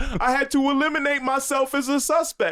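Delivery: very high, very loud, blurted comic delivery. Retelling a Tracy Morgan joke about his aunt: Tracy Morgan impression. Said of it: "dumb smart in the way he talks".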